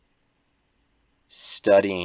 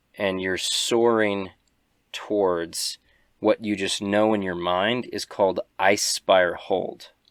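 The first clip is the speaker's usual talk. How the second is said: plain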